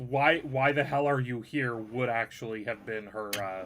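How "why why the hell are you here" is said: ordinary talk, nothing marked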